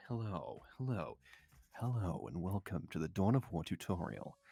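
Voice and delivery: strange, weird low purring voice. A voice actor shows off a voice they love using, weird purr voice. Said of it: "Like this sort of like weird purr voice".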